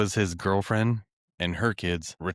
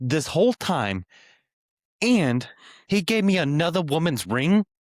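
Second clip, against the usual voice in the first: put-on outraged outburst, very high and raised; 9 semitones higher, 5 dB louder than usual. Acting out how much madder she should be, mock-furious woman. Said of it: "to be like way more mad at that".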